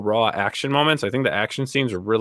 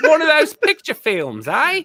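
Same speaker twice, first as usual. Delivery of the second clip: fake British accent, very high pitched. Imagining asking someone on a date, put-on British accent. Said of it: "if I had a British accent".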